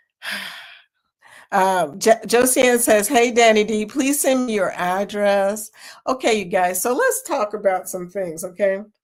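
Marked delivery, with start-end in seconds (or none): none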